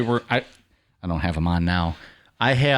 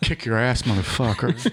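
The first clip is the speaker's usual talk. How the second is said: put-on muttering under the breath. Retelling a tough line said later out of earshot: imitating muttering under breath. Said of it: "I said this under my breath".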